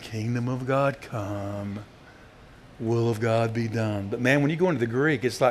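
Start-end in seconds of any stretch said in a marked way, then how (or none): 0.0-4.1 soft, weak, meek and feeble voice. Mocking how movies show the prayer, imitating a soft, weak Jesus. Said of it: "a soft, meager, weak voice saying".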